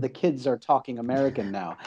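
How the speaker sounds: ordinary delivery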